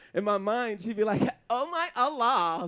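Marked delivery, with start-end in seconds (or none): 1.5-2.7 put-on valley girl accent.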